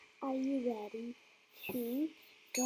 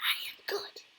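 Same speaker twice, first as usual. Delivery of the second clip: very whispery, breathy whisper. Telling a made-up train story, voicing children who answer: very whispery voice. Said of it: "in a very whispery voice".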